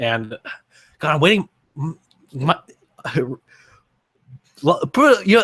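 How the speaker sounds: stammering, stuttering, words tangling, losing the thread. Talking to viewers about waiting on voice lines, stuttering. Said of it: "sorry, I'm stuttering here".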